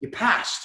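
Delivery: high, offhand nonchalant tone. Retelling how a petty officer told him he passed: imitating a nonchalant delivery. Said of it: "he said it so nonchalant".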